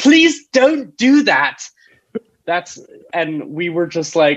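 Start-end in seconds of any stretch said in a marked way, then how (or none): 0.0-1.6 put-on very high, sing-song, swooping old British man voice. Retelling the teacher scolding the class after banging the piano, old british man voice. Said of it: "he's this British old".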